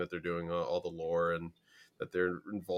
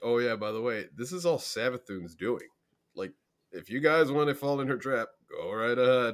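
put-on, offhand, nonchalant sarcasm, raised and high; 5 semitones higher, 5 dB louder than usual. Retelling what Imara said about Savathun: imitating Imara, nonchalant and sarcastic. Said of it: "he's so nonchalant about it and kind of, like, uh, sarcastic".

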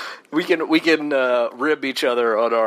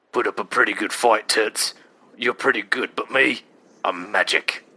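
rough, lower-pitched put-on voice; 3 semitones lower than usual. Approximating how an actor talks before checking his name, in a very rough Colin Farrell impression. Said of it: "a very rough approximation of how Colin Farrell talked".

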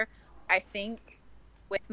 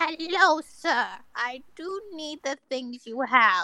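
put-on elderly woman voice; 6 semitones higher, 5 dB louder than usual. A player tries out possible characters to be, old lady voice. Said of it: "Or I could be an old lady".

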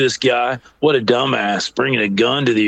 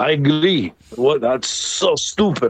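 horrible, bad, fake put-on Turkish accent; 3 semitones higher than usual. Retelling what a man from Turkey said at the airport, in a horrible Turkish accent. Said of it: "that's the horrible Turkish accent".

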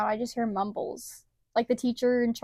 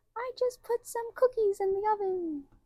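put-on very high, soft, sweet old-lady voice; 10 semitones higher, 5 dB quieter than usual. Showing off a trend, the speaker tries a sweet grandma voice. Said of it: "like a sweet".

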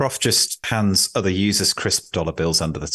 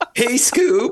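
loud, very high cartoon sidekick voice, called out; 4 dB louder than usual. Taking up a challenge to present as cartoon characters, loud Shaggy impression. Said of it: "I'm doing very loud impressions".

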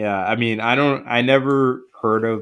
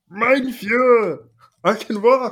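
very high cartoon puppet-frog voice; 13 semitones higher than usual. Acting out a character's line, in a Nazi Kermit the Frog voice. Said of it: "he sounded like Kermit the Frog if he was Nazi".

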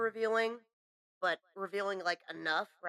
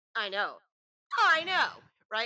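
loud, emphatic, pitch swinging up and down; 4 semitones higher, 7 dB louder than usual. Reacting to a story about a spin-the-bottle kiss, Monica impression. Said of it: "That was my Monica impression".

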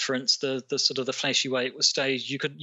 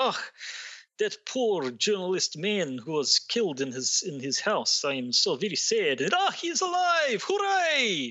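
put-on very slow, drawn-out, swooping, drifting Eastern European accent; 6 semitones higher than usual. Speaker imagines Putin biting his nails: Putin impression, shifting Eastern European accent. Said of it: "My accent went through about five different Eastern European countries".

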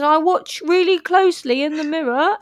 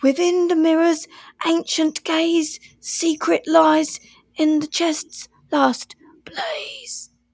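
very whispery, hushed whispering voice. Asked what the figure proclaimed, the goblin repeats its words: very whispery voice. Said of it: "He said in a very whispery voice".

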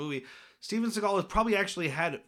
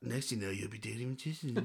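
barely audible, very quiet, low mumbled voice; 8 semitones lower, 11 dB quieter than usual. Retelling a movie line in a Steven Seagal voice: mumbled. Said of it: "a mumbled line that you barely hear".

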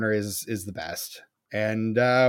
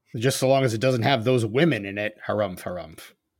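usual speaking voice

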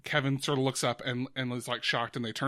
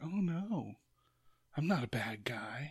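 dark, slow, creeping tone; 6 dB quieter than usual. Pitching how a character should seem like a creep, darker tone. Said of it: "a little bit of a darker tone".

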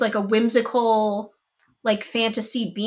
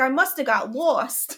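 put-on ridiculous, over-the-top New York street-kid accent. Recounting a film's little orphan boy's line, ridiculous new york accent. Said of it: "had like a ridiculous new york accent".

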